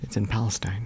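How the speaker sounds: whispered, hushed, very quiet, barely audible. Answering where something is, whispering. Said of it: "Why'd you whisper it?".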